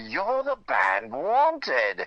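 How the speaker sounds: put-on slow, swooping, savoured, great British accent. Retelling what a man stepping out of the elevator said: British accent. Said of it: "with a great British accent".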